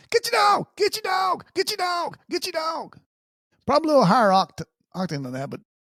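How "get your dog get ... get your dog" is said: high, drawn-out holler. Telling of a dog running toward them, the speaker re-enacts their shout: retelling own hollering. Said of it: "I'm hollering".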